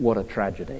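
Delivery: put-on muttering under breath. Retelling what a listener said under his breath during a talk on Jesus' death, muttered. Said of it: "quite loudly, but under his breath".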